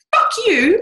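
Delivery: very high, loud, light voice. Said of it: "it comes from up here".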